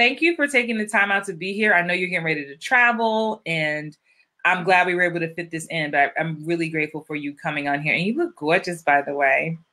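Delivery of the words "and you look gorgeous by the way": New York accent, said offhand. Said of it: "I turned into, like, a New Yorker".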